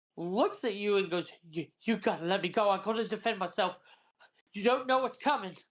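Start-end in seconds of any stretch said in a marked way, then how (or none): 1.5-5.5 panicked, terrified begging voice with climbing pitch. Voicing a guard held in a grapple, begging to be released: absolutely terrified guard. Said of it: "looks absolutely terrified".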